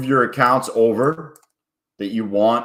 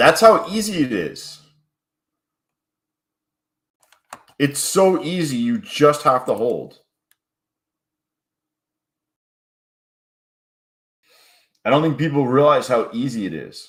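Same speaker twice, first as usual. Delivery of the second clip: sarcastic, mocking tone; 2 semitones higher than usual. Talking about copy trading and just holding: sarcastic. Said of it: "I'm being sarcastic".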